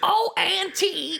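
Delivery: croaked out, high and rough. Suggesting what the other speaker would quote instead: bad Marge Simpson impression. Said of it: "a Marge impression".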